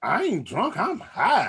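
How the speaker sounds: sassy, swooping voice, full of attitude. Retelling what a girl who couldn't stand up said, imitating her attitude. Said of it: "she said it with an attitude".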